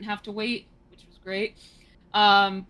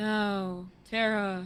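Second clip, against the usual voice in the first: put-on tired whispery voice, quieter; 6 dB quieter than usual. Mocking a character's voice acting while talking about the game: imitating Aqua's voice. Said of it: "Aqua sounds like".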